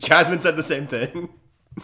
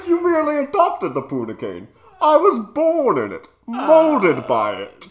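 very high, swooping, put-on voice; 11 semitones higher than usual. Joking about how to read something aloud, the speaker slips into a Bane voice. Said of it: "I could read it in a Bane voice".

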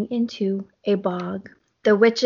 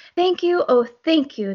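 high-pitched cry sounding grateful; 7 semitones higher than usual. Narrator reading a rhyming story, the witch's line, grateful cry. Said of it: "the grateful witch cried".

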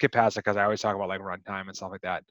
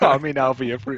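put-on Jamaican accent, higher and louder; 5 semitones higher, 6 dB louder than usual. Recalling a fortune teller's TV ad: Miss Cleo impression. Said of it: "Miss Cleo".

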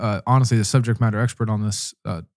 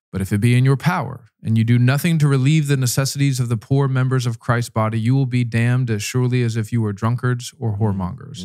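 normal talking voice

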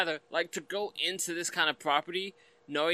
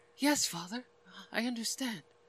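put-on, half-whispery starlet voice, higher and quieter; 7 semitones higher, 4 dB quieter than usual. Imitating how Supergirl talks in the film: Helen Slater's half-whispery starlet voice. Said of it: "half whispery s-, starlet voice".

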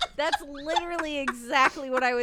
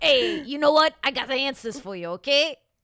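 bad, fake, put-on New York accent; 4 dB louder than usual. Joking that New York accents don't suit spiritual wisdom, speaker puts on a bad New York accent. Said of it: "That's a bad New York".

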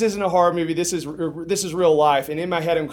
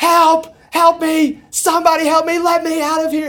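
very high, very loud, panicked screams; 12 semitones higher, 7 dB louder than usual. Retelling banging on a locked door to be let out; retelling a scream for help. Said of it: "I'm just screaming at the top of my lungs".

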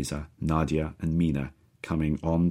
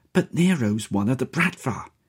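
high, hissing voice in utter panic; 9 semitones higher than usual. A man grabs the narrator's sleeve and warns them, a panicked hiss. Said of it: "he hisses to me, in utter panic".

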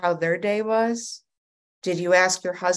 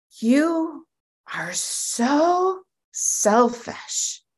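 put-on calm, higher, much slower; 8 semitones higher, 4 dB louder than usual. Retelling what a sponsor said over the phone, imitating a calm voice. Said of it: "she just gets just very calmly".

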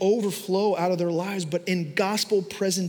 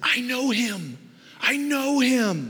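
put-on thrilled, very slow, drawn-out, swooping excited cry; 6 semitones higher than usual. Retelling a man's reaction when told Santa is coming: retelling an excited scream. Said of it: "he's like screaming and yelling".

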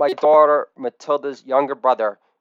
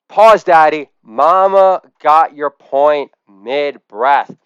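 put-on little-girl voice, mama drawn out, slow and loud; 5 dB louder than usual. Speaker acts out his daughter playing marriage counselor to him, as an impression of his daughter. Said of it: "this is an impression of my daughter".

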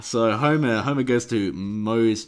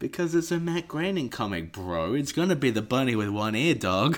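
ordinary talk, nothing marked

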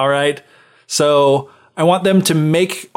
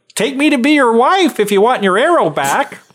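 high fairy-tale frog voice; 9 semitones higher than usual. Retelling a story, the frog bargains with the prince: frog voice. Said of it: "There's only one frog voice".

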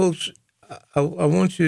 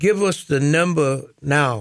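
plain

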